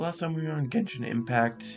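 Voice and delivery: voice breaking mid-phrase, cracking up high. Host recapping the last genshin impact episode for viewers: voice cracking. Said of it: "excuse me, the voice crack".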